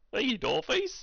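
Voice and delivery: high, friendly southern cowboy drawl. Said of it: "Theodore a southern accent".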